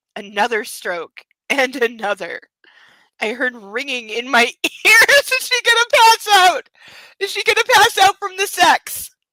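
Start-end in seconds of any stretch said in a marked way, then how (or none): 5.3-9.1 very high-pitched, loud, full-on yelling. Reacting to the sex scene just read aloud, yelling. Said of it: "I know I'm yelling".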